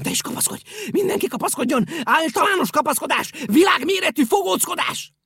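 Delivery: rattling off. Pompom answers Picúr's question; gabbling. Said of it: "Hadarta Pompom".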